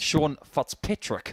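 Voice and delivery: New Zealand accent with Kiwi vowels. Showing how Kiwis say a name, New Zealand accent. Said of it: "when the Kiwis say it, they say it so amazingly. Because they do their vowels differently".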